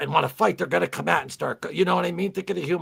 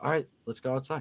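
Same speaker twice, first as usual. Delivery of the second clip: mock-calm, much quieter; 2 semitones lower, 8 dB quieter than usual. Speaker retells how the listener accepted a challenge to go outside, calm as ice. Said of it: "like calm as ice".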